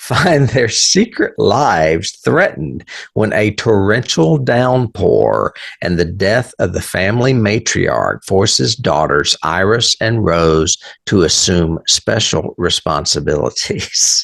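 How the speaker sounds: slow, deliberate, unhurried reading, word by word. Speaker reading a movie synopsis aloud so listeners can follow, reading slowly. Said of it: "I read that slow".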